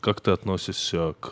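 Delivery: put-on mysterious tone. Retelling how someone asked a question: imitating a mysterious tone. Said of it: "загадочным тоном".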